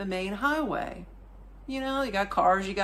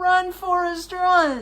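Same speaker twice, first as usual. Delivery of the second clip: put-on high, loud, slow yell in American accent. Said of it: "I'm yelling in American".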